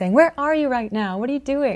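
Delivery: angry. Language teacher acting out a wife phoning her husband who isn't home, angry. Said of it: "she's angrily saying".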